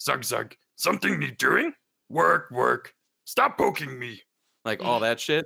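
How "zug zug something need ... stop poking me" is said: rough, creaky, scraping creature voice. Speaker describes auditioning for a pig-people role, Warcraft 3 orc peon voice. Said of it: "I just did these other lines with that voice".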